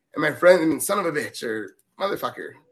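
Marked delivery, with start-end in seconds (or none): none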